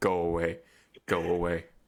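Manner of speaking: low, gruff, grumpy growl, short.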